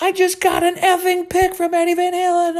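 mock very high, loud shriek of excitement. Recalling recording a concert on tape, reenact retelling excited screaming. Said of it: "I'm like screaming into the tape".

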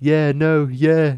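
loud, high, tossed-off chatter. Retelling a funny video, doing a Ricky Gervais impression. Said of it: "doing a perfect Ricky Gervais impression".

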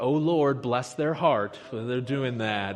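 snide, insincere, sarcastic tone. Showing a wrong way to pray for an enemy: sarcastic prayer. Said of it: "a sarcastic".

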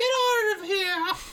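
very high, exaggerated, over-the-top fake woman's voice. Imitate Terry Gilliam deciding to be a woman, in Terry Gilliam's over-the-top fake woman's voice. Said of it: "With that over-the-top fake woman's voice".

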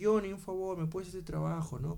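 put-on elderly gentleman's way of talking. Retelling a man's request for a work favor, in an old man voice. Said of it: "Con su voz de viejito".

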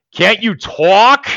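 strong put-on New York accent. Retelling a guy trying to get a woman to talk, in a heavy new york accent. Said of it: "in a really fucking New York accent".

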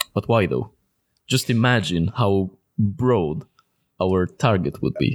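very low voice. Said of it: "why have you changed your, your, your pitch, your voice pitch?".

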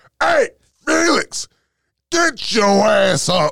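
very loud, very high, shrill drill-sergeant bellow. Recalling a coach who always sounded like a military sergeant: imitating a drill sergeant yelling. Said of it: "like a military sergeant yelling".

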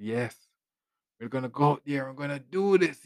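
high, rousing, inspiring motivational tone. Joking that the podcast has a new phase: mock inspirational speaker. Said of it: "Speaking like a person inspiring people".

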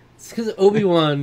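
high, loud freak-out with a laugh. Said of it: "He's like".

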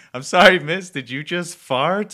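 loud, high-pitched, slow scream.

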